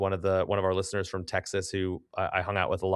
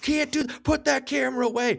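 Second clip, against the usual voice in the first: play-acted yelling, pitched very high. Retelling how the pit boss at the craps table yelled: imitating the pit boss yelling. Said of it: "Just starts yelling".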